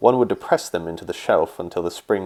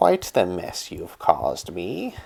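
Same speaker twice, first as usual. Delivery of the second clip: hoarse, raspy feminine voice. A man tied up on his knees hears a voice speak to him, raspy, higher-pitched feminine voice. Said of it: "It was raspy, feminine".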